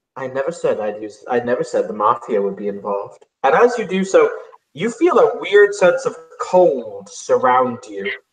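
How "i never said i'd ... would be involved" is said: close, secretive, hushed half-whisper. Voicing a character who leans in close to someone: half-whispering in someone's ear. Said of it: "he whispers in your ear".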